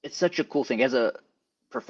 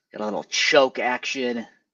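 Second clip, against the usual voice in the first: ordinary talk, nothing marked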